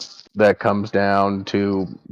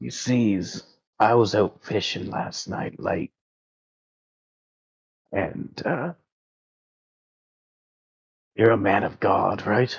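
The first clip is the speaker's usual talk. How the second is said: hushed, lowered voice, kept close; 5 dB quieter than usual. In a role-play, a man speaks to the one he calls a man of God, lowered voice. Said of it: "And he lowers his voice".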